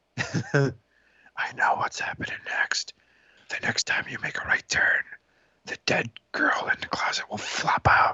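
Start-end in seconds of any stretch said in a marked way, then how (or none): 1.4-8.2 soft, secretive whisper. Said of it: "you should whisper in his ear".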